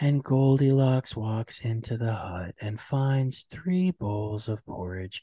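flat, even monotone reading voice. Describing a podcast that reads fairy tales to put you to sleep, Sleep With Me monotone voice. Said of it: "talking in a real monotone voice".

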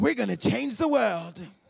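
put-on British-accented delivery. Holding him in his arms, redoing the Son of God movie: Jesus British accent. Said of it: "the British accent".

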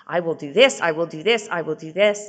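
mock, desperate, repeated pleading. Retelling begging a departing husband to stay: imitating begging and pleading. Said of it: "I beg and I plead".

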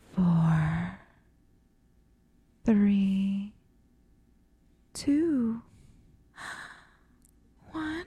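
sexy, seductive voice. Counting down from ten after the other does it sexy: sexy countdown voice. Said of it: "why don't you go from ten to one".

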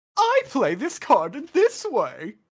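put-on rich, high, swooping, prissy little-kid voice. Mocking how the dub voices a kid character: imitating a high-pitched prissy kid voice. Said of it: "high-pitched, rich, prissy kid voice".

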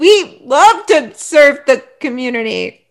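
stilted, uncomfortable, slow, awkward delivery. Retelling Bowden walking everything back: imitating Bowden's awkward tone. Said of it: "how awkwardly he's like".

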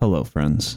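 soft whispered impression. Speaker does their best impersonation of Jim Nantz, close to the microphone, quietly whispering. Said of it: "getting really close to the microphone and just quietly whispering".

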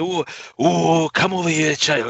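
put-on crackly Welsh accent, high, slow and drawn out. Speaker recalls a game's gramophone save point calling to him: crackly Welsh voice. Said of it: "some crackly Welsh voice".

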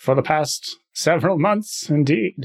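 relished character voice, savoring every word, slightly high. Speaking in character to the other players: Matt Berry voice. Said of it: "I fucking love Matt Berry's voice".

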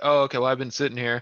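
put-on clueless, innocent-sounding, playing-dumb tone. Retelling playing stupid to the cops in the line: imitating playing stupid. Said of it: "tried to play stupid and be like".

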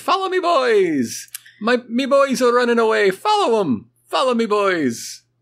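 put-on very high, fun leprechaun voice, "boys" stretched out. Showing how the movie title should be said: fun little leprechaun voice. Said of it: "a fun little leprechaun saying".

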